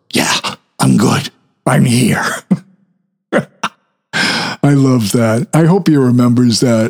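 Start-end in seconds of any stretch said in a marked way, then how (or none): 0.1-2.2 loud, carrying stage whisper. Retelling answering up from the basement to someone calling down, retelling a loud whisper. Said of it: "respond in a loud whisper".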